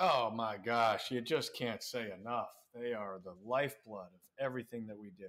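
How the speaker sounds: slow, over-the-top, sarcastic gushing. Joking about the parents with another speaker: sarcastic gushing praise. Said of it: "we're being sarcastic".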